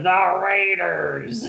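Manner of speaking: high, rough, raspy croak. Showing how to announce a team pick: Chris Berman voice. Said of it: "You gotta say it like, uh, Chris Berman or whatever".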